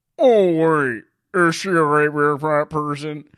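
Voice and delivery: slow delivery, each word drawn out. Quoting a movie line as Buffalo Bill from Silence of the Lambs. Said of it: "my favorite quote to, to do".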